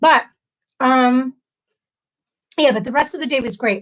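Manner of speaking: talking while chewing, mouth full. Speaker talking while eating, mouth full. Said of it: "I apologize if my chewing is really loud".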